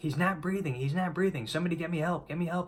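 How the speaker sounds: frantic, high-pitched, rushed, panicked screaming. Retelling a woman screaming while he wasn't breathing, imitating her panicked screaming. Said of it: "she was screaming".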